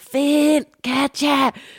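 put-on shouting. Retelling how they sat in bed calling out for two people, retelling a shout. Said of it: "sidder og begynder at råbe".

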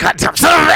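very high, shrill, loud furious screaming rage. Retelling a phone fight with a then girlfriend, Nick Nolte screaming. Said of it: "sounded much like, uh, Nick Nolte when I was screaming at her".

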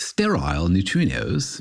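put-on British accent with swooping sing-song tune. Pronouncing a physics term for uk fans, in a british accent. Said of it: "I think you have to pronounce it with a British accent".

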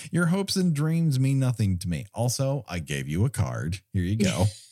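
plain

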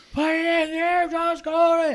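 put-on very high-pitched scream at full lung. Retelling being yelled at while stalled in an intersection: imitating someone screaming. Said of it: "He's just screaming at the top of his lungs".

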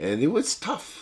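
voice tight with emotion. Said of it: "I'm getting choked up right now".

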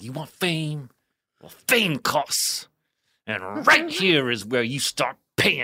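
put-on intense dance-teacher voice, dramatic, full out. Retelling performing the Fame speech at a table: dramatic Fame speech, full out. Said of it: "remember in the scene in Fame".

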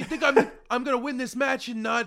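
shrill, booming put-on voice, high and full blast. Quoting him and slipping into the voice: Taz voice. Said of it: "oh fuck, I'm doing Taz".

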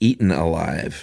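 plain

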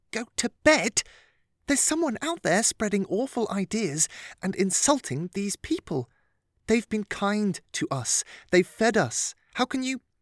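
contained outrage. Lillian answers mr. attacop, containing her shock so as not to raise her voice. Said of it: "contain her shock so as not to raise her voice".

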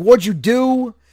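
crazed, loud, high-pitched yelling. Recapping a scene where a man yells at the woman who shot the walker, imitating someone yelling. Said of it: "He's yelling at her like".

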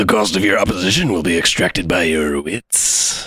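very deep, undead zombie-like voice. Reading a card's text aloud to the group, doing Nekusar as a zombie lich. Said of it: "That sounds like a zombie lich to me".

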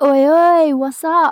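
high, loud, cheeky shouted "oi oi".

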